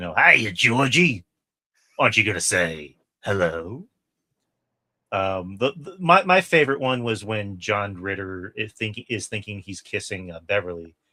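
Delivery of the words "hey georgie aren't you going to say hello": sinister, darkly comic, half-joking evil clown voice. Comparing Curry's clown to an evil Krusty the Clown, then doing Tim Curry's evil clown voice. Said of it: "almost like an evil Krusty the Clown".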